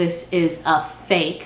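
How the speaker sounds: the word fake stressed, slow and heavy.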